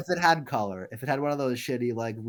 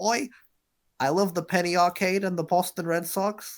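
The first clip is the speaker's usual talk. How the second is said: comic put-on British accent, pitched up; 7 semitones higher than usual. Teasing the other speaker about their younger days, in a mock British accent. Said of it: "Why am I British?".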